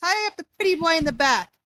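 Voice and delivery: thin, high, nasally voice. Narrating the scene, the speaker voices another of the figures: thin, nasally voice. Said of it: "in a thin, nasally voice".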